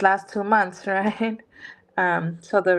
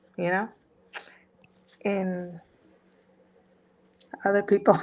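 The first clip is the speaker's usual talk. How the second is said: tearful, crying while talking; 3 dB quieter than usual. Explaining being upset at oneself after an emotional day, tearful. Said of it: "so excuse my tears".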